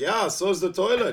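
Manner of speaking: put-on German accent. Quoting the way some people always say a line, in a german accent. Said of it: "the way they say it is in a German accent".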